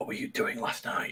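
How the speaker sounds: very quiet whisper, awkwardly close. Playing a character who creeps up close to question someone: whispering into someone's ear. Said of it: "and whisper into his ear".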